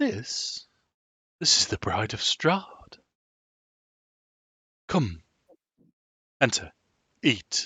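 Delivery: smooth, fluid, flowing character voice. Narrating a scene, the speaker voices a man with a fluid, flowing delivery. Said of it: "everything's fluid with him and flowing".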